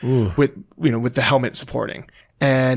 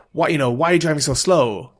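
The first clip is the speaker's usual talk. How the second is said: mock angry yelling, acted out; 2 semitones higher than usual. Retelling a crash, quoting the taxi driver, retelling an angry yell. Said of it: "he's like yelling at me".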